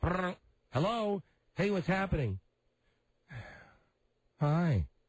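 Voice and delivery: mock unenthusiastic, dragging. Showing the tone a woman used when she answered your hi, imitating a less than cheery woman. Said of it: "here's the tone ... you sound less than cheery".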